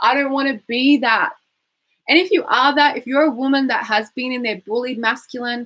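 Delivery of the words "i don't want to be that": whiny, complaining delivery. Coaching listeners, the speaker demonstrates saying the line in a whiny voice. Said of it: "Say that in a whiny voice".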